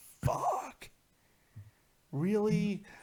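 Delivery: dismayed, high, swooping pitch. Acting out the wrestler's reaction to Vince: imitating Ryback, dismayed. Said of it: "Ryback was just like".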